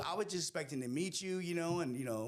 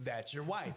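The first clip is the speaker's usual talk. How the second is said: plain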